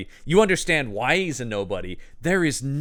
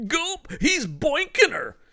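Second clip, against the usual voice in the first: very high-pitched, silly, goofy, cartoonish put-on voice; 14 semitones higher than usual. Retelling a man's reaction during a conversation, in a put-on voice. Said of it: "just because I was doing that voice".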